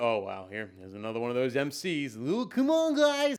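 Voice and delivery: fed-up, unimpressed, had-enough tone. Imitating how the audience reacts to an MC putting on a shtick: imitating an audience member. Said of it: "They're gonna".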